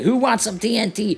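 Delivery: high-pitched, wacky character voice. Quoting a game character's voice line, doing a Dynamite impression. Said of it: "And I'm doing impressions again".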